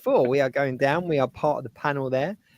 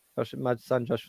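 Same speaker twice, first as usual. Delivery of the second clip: plain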